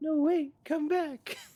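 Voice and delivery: put-on very high, loud small-child voice. Voicing a little girl calling after the party as the portal closes: little girl's voice. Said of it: "like the sound of, like, a little girl just like".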